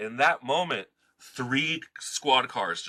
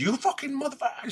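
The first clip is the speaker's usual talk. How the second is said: play-acted furious screaming, pitched very high; 14 semitones higher than usual. Retelling a confrontation, quoting a man's insult as a mock scream. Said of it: "screaming at me".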